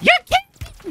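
tiny, squeakiest very high-pitched voice. Player quoting another player's reaction, imitating a squeaky voice. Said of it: "He said with the squeakiest voice".

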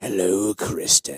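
menacing, creepy put-on demon voice. Asked to do the voice of a demon who threatens a woman, put-on creepy demon voice. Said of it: "You could do the voice".

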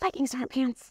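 confiding stage whisper. Retelling hugging a sales rep at a production company: retelling a half-whisper. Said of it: "I whispered in her ear".

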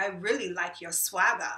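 put-on Australian accent. Retelling what a man told the speaker, imitating Jesse's accent. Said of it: "I hate that I'm going to do this accent".

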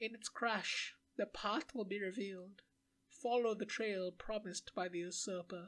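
put-on strange old woman voice. In a role-playing game, a strange old woman answers the players: strange old woman's voice. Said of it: "The strange old woman had answers".

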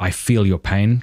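normal talking voice

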